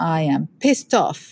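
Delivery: ordinary talk, nothing marked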